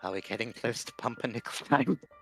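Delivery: speaking in a whisper. Whispering in character to the others so the guards don't hear: whispering. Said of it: "I'm just gonna whisper to them".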